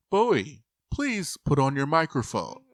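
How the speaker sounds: announcer voice like over a PA. Explaining how the show's speakers work, imitating the Big Brother announcer voice. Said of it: "the Big Brother voice comes on and says".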